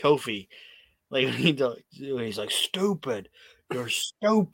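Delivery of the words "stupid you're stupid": put-on small, held-in, mild shouty jab. Retelling how a wrestler yelled at Kofi: imitating Randy yelling. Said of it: "when Randy yelled at it".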